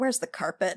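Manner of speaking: soft mutter under the breath, aside. Voicing a captain who stops and asks the footman: muttering. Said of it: "you can kinda hear him mutter".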